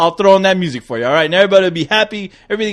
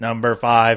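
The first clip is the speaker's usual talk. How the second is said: robotic voice, lower pitch; 7 semitones lower, 5 dB quieter than usual. Asked to give something dramatic, the speaker answers in a robot voice. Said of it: "That's my robot voice".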